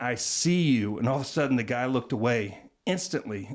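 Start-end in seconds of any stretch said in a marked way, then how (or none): 0.0-1.0 hushed, pointed, voiced stage whisper. Retelling words said to someone far away: retelling a half-whisper. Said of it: "And one time I remember just whispering".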